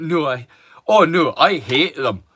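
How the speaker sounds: slow, heavy, play-acted dripping sarcasm. Retelling a mate's reply to a comment: imitating sarcastic reply. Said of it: "weird with sarcasm as you can get".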